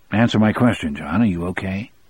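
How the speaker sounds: ordinary delivery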